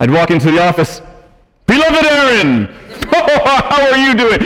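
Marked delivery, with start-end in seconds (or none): 1.7-4.4 slow, drawn-out, pitched-up festive voice. Acting out greeting a colleague walking into the office: Santa voice. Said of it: "I sounded like Santa there".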